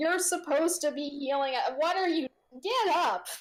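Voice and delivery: high-pitched, berating, scolding yell. Storyteller voices an uninjured half-elf at the downed cleric, yelling at him. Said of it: "the uninjured female half-elf is now yelling at him".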